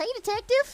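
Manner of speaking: dopey, goofy, doofy put-on character voice. Greeting a detective in a bit: doofy voice. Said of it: "This guy got a doofy voice".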